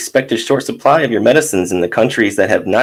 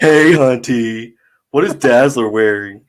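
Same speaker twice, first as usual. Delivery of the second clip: acted, put-on female voice. Reading a reporter's part after being asked: put-on woman voice. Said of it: "Get your best woman voice on".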